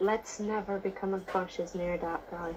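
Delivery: soft, voiceless half-whisper. Half-whispering in character to Quill about an odd stranger: half-whispering in character. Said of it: "Can I quickly whisper to Quill".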